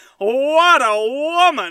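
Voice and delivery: put-on loud, high-pitched, old fifties-movie style exclamation. Acting out a hungover dog's words: 1950s movie character voice. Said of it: "Like he's a goddamn character from a nineteen fifties movie".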